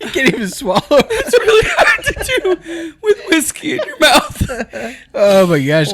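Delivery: talking through laughter. Trying to keep talking after hours of laughing, laughing while talking. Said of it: "I've laughed this hard".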